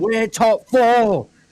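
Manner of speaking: mock very high, shrill, celebratory, joyful shriek. Retelling the moment the draft pick showed up: retelling own scream. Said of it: "I'm screaming".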